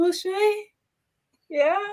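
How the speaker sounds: put-on crying voice. Retelling a phone call, imitating a put-on crying voice. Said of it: "You came on the phone with the voice".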